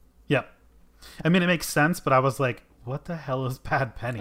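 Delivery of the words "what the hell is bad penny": normal talking voice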